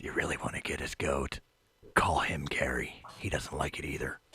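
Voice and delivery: soft, hushed whisper close to the ear. Leaning in to the monk's ear during the game: whispering in his ear. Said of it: "I whisper in his ear".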